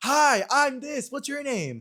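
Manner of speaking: over-exaggerated hyper energy, very high-pitched. Retelling how a college friend first greeted him: imitating over-exaggerated hyper fun energy. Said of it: "this over-exaggerated, hyper fun energy of".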